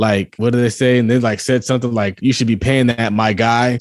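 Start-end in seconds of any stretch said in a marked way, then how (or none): none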